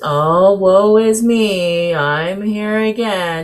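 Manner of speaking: mopey, gloomy, very slow, woeful delivery. Explaining depression by recalling a gloomy character's demeanor: mock-gloomy Eeyore voice. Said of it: "think about Eeyore ... his demeanor of just".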